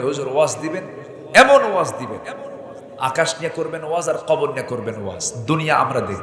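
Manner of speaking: ordinary talk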